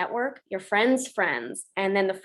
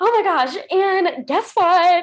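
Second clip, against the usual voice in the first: put-on very high, very loud, thrilled excited burst; 9 semitones higher, 8 dB louder than usual. Showing how she talks when excited, not professionally: imitating her own excited talk. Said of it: "when I get really excited about something".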